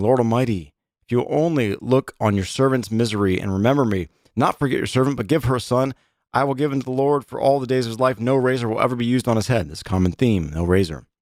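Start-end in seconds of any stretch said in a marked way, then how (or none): none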